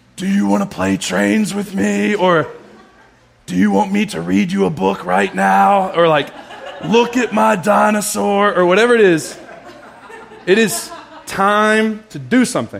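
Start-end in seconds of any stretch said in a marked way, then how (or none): 0.2-5.9 put-on close-up child's whisper, higher. Speaker retells the kids whispering close to their face, imitating a child's whisper. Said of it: "they whisper this close to my face".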